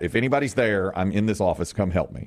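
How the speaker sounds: ordinary talk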